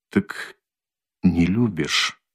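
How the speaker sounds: soft, quiet, hushed voice. Svidrigailov asks Dunya, quietly. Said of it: "тихо спросил он".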